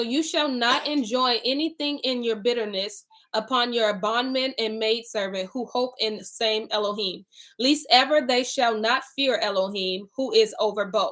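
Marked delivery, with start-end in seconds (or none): none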